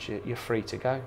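ordinary talk, nothing marked

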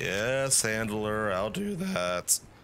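voice cracking. Answering the handler while playing a game, voice cracking. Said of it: "my voice cracked".

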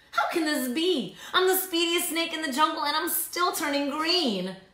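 high, gasping, stunned shock outburst. Narrating a story, voicing the snake Verdi's words, gasping. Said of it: "He gasped".

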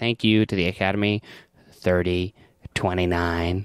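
put-on cheeky voice. Retelling an Oscar acceptance speech countdown: imitating Charlie Kaufman saying it cheekily. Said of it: "cheekily says the countdown".

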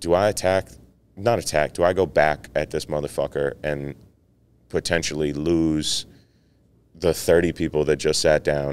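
normal talking voice

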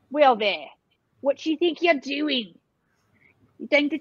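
put-on regional English accent. Speaking to him in the accent of the part of England they met in, regional English accent. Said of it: "I start speaking to him in our language of the part of England".

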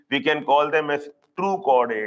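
normal talking voice

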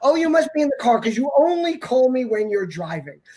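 pointed, guilt-tripping little jab.

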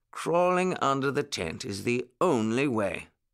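ordinary talk

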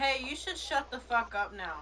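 aggressive. Telling another player to shut up during a game: aggressive. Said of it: "That sounded so aggressive for no reason".

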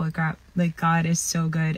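ordinary talk

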